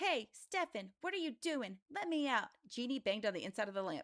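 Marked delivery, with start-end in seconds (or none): 0.0-2.5 tiny, high little voice, pitched up. Trapped inside the lamp, Jeannie calls out to Stefan in a tiny voice. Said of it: "a tiny voice came out of the lamp".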